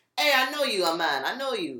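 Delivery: put-on thick, heavy Jamaican accent, laid on. Speaker retells a man behind them in line greeting them, heavy Jamaican accent. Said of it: "It's all this heavy ass accent".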